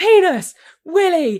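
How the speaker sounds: loud, high-pitched calling out.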